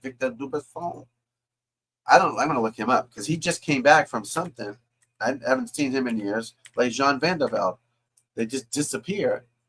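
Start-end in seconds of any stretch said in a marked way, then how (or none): 0.0-1.1 put-on French accent, much quieter. Repeating a name he just said, now in a French accent. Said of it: "That's my French accent".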